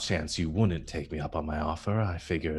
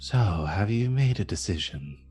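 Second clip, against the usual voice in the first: rasping voice ringing hollow, as if from within; 3 semitones higher than usual. A figure who strode out of a stone wall speaks: raspy, echoing voice. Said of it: "that same raspy voice, this time echoing a bit more".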